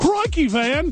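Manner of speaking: put-on Australian accent, very high-pitched. Coming back from a break, joking in a put-on Australian accent. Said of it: "that's Australian".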